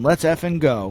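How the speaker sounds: loud, screaming, shouted yell. Retelling a photo of a player screaming at his team: imitating someone screaming. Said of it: "He's screaming at the team, yelling".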